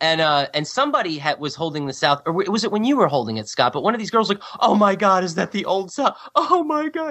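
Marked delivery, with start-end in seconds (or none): 4.6-7.1 tearful, sobbing, high, drawn-out bawling cry. Retelling a girl's reaction to seeing a flag: imitating someone bawling. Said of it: "she just started bawling right there".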